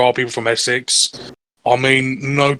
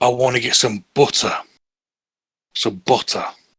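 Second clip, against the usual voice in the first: imitated British accent. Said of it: "speak like a British person".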